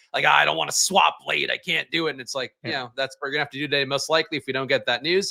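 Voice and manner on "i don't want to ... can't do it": put-on voice of a curmudgeonly old New York man. Imitating people in the chat who complain about moving lineups: curmudgeonly old new york man voice. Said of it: "a curmudgeon-y old New York man voice".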